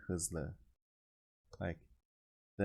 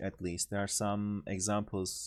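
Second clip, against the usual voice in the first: normal talking voice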